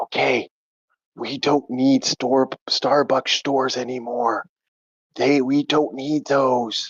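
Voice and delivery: hushed whisper. Telling the others a secret truth about Starbucks, whispering. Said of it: "I'm gonna whisper it".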